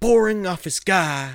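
high-pitched, loud, slow delivery.

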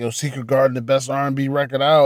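ordinary delivery

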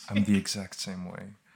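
soft, low ASMR near-whisper. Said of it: "it's very soft".

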